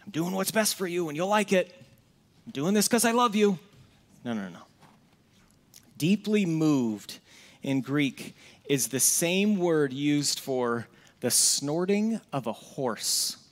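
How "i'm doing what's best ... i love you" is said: barking drill sergeant. Acting out how a drill sergeant would talk: mock drill sergeant voice. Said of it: "does that sound like a drill sergeant to you?".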